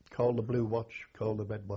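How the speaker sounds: usual speaking voice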